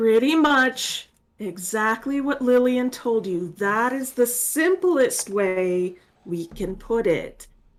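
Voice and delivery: very slow, deliberate, careful speech. Voicing a character explaining to a confused one: speaking very slowly. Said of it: "I'll speak very slowly".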